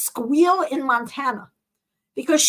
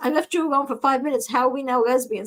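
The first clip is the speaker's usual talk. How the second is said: ordinary delivery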